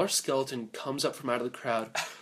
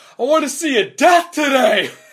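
very high, very loud, shrill frenzied scream; 12 semitones higher, 12 dB louder than usual. Character pushed to the back of a cheering crowd, screaming wildly. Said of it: "I'm screaming my head off".

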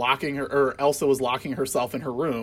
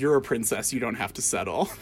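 put-on muttering under the breath; 2 semitones lower than usual. Retelling a film scene where a character pops in with a remark: under his breath. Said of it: "under his breath is like".

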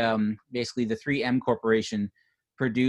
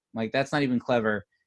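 ordinary talk

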